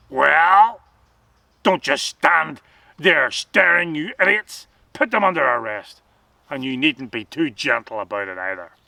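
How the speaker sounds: rough, loud, barked delivery. Sergeant Hack orders the soldiers to arrest the silent three, in a rough voice. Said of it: "Sergeant Hack's rough voice broke into the silence".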